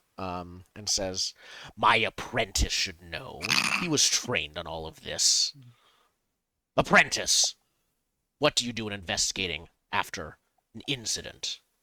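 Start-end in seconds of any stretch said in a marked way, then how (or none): 1.8-11.6 low, grim, gravelly voice. Interrupting the conversation, Justice Beam questions his apprentice in a low, grim, gravelly voice. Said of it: "classic sort of low, grim, gravelly voice".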